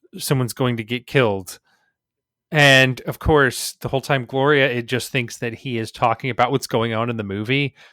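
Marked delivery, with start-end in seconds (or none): none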